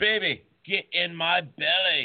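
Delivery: very slow, high Scottish voice. Quoting a movie character's line to a guest who hasn't seen it: Fat Bastard voice. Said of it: "And he used to say to Mini-Me".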